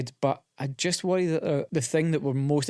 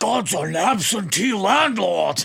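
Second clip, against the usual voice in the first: very slow, drawn-out, big and high put-on voice; 6 semitones higher, 6 dB louder than usual. Asked for a devil's advocate voice, answering with an Al Pacino impression. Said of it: "That was my impression of your impression of Al Pacino".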